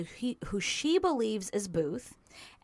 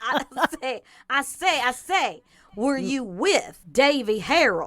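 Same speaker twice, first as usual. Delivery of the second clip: loud, booming cartoon voice with a big drawl; 4 semitones higher, 8 dB louder than usual. Reading interview questions aloud with a co-reader, in a Foghorn Leghorn accent. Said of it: "with the accents of Foghorn Leghorn".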